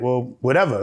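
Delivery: plain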